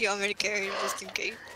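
fast, quick whisper.

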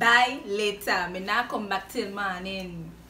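attempted Guyanese accent. Repeating a practice sentence while trying accents, in an attempted Guyanese accent. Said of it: "It didn't sound quite like Guyanese".

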